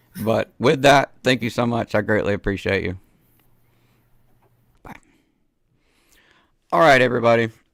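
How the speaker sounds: voice giving out. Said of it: "I'm sorry I'm losing my voice".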